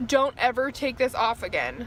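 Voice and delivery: ordinary talk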